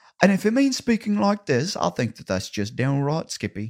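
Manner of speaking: American Southern accent blended with English accent. Speaker talking about wanting to fit in, showing how they'd speak; Southern-English mixed accent. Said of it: "that was like a southern accent mixed with an English accent".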